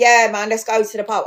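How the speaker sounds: put-on cockney accent. Speaker describing a French guy who comes across as cockney, imitating a cockney accent. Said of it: "this guy who's a proper cockney".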